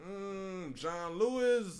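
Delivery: halting, hesitant, stuttering voice. Retelling classmates answering a school question: imitating someone stuttering. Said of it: "like, stuttering".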